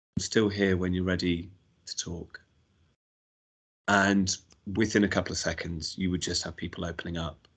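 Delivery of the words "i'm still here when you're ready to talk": serene, utterly calm voice. Quoting how she spoke to people who stayed silent: retelling in the calmest voice. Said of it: "saying in the calmest voice".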